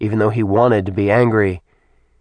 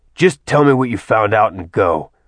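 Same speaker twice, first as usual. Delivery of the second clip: ordinary delivery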